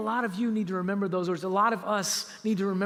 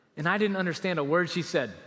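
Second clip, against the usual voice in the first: normal talking voice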